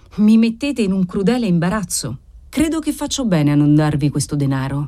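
plain reading voice

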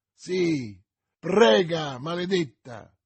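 sudden, exclaimed outburst. The baron answers Milady's plea to forgive the man: exclaimed. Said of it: "esclamò il barone".

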